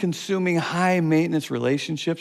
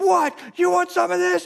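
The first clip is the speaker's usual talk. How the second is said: put-on shrill, aggressive tough-guy scream, very high; 13 semitones higher than usual. Telling a road-rage story, the speaker acts out one man yelling at another: retelling screaming and yelling. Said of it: "he's screaming and yelling".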